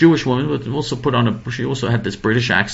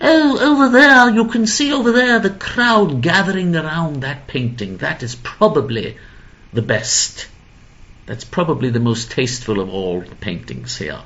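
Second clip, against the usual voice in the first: put-on British accent with swooping pitch; 4 semitones higher than usual. Retelling a woman's answer when asked about the best painting here, British accent. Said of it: "she had a British accent".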